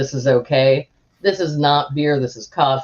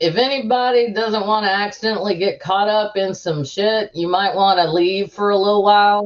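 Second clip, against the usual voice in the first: pitched-up, public-announcement style calling out; 6 semitones higher than usual. A player voices their character addressing everyone in the tavern in a very loud voice. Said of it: "says in a very loud voice".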